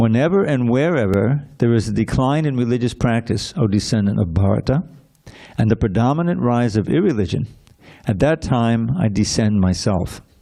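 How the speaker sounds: usual speaking voice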